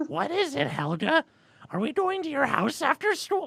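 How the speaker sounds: very high, gravelly voice with swooping pitch. Reading a story aloud, voicing a character's line, gravelly Marge Simpson voice. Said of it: "that is Marge Simpson".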